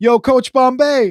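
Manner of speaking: loud shouted put-on American accent. Retelling how an opposing player called out after the speaker, imitating an American-accent yell. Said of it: "in an American accent yell".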